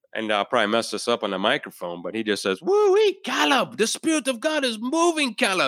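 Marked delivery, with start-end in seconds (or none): 2.7-5.7 very high, excited, whooping, swooping, drawn-out yell. Retelling how Simon reacted to the villagers: imitating Simon yelling excitedly. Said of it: "he just kind of yells".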